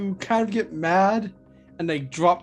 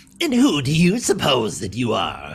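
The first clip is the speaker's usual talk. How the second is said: put-on villain voice; 6 semitones lower, 3 dB louder than usual. Answering a request for a Joker voice: Joker voice. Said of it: "Can anyone do a good Joker voice".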